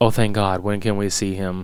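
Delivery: utterly deadpan, low, flat, no emotion. Retelling a dad's reaction to hearing his son will live: imitating deadpan delivery. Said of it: "just the most fucking deadpan way of delivering this".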